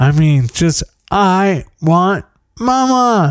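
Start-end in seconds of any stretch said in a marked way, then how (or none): 1.1-3.3 mock toddler screaming tantrum, high wailing. Retelling a child screaming for forty-five minutes: imitating a child screaming. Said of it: "broken blood vessels in her face from screaming".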